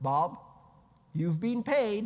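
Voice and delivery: loud, canned, automated computer-alert announcement voice. Explaining a wallet payment notification, announcing Bob's payment in the AOL 'you've got mail' voice. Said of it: "with the A O L voice".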